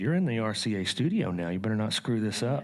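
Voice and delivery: put-on Iowa accent with wide swooping pitch.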